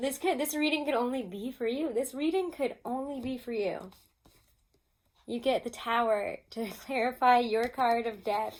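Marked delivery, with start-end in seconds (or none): 5.3-8.6 loud, talking while laughing through the words. Reading out which tarot card clarifies another: laughing while talking. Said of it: "I'm laughing because".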